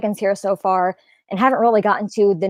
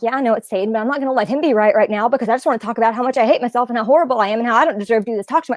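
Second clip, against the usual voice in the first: rapid-fire, rushed, rattled off; 2 semitones higher than usual. Retelling own racing thoughts about hating oneself: talking very quickly. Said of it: "I'm talking that quickly on this part".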